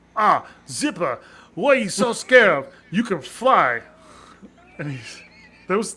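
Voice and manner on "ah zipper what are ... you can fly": put-on very loud, high, belted-out Australian accent. Correcting the other speaker's retelling of a scene, in Monterey Jack's Australian accent. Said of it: "you gotta do it with the Australian accent".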